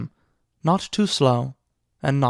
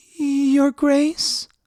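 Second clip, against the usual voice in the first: trembling, tremulous, very high call. Narrator reads her calling out to Joffrey in the hall, soft, tremulous voice. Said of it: "in a soft, tremulous voice".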